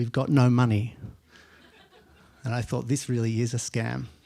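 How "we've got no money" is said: put-on deep Spanish accent. Retelling a phone call and quoting the caller, imitating Cesar Espada's deep Spanish accent. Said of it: "this man in a big deep Spanish accent said".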